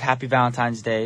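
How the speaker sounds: ordinary talk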